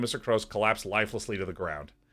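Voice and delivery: plain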